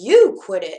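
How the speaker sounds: very deep, low, loud, snappish voice. Conrad answers Sally after she snaps at him, snapping back. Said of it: "Conrad snapped back".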